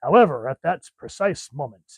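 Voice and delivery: retro sixties TV announcer voice. Reading aloud the way the speaker's kid likes: 1966 Batman announcer voice. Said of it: "sixty-six Batman announcer voice".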